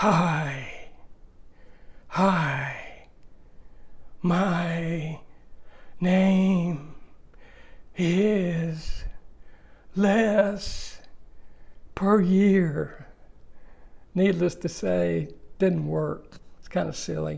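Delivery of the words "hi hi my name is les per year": very slow, breath pushed out on every word. Speaker demonstrates a seminar doctor's speaking method: breathing out on each word. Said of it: "he would have us talk like this".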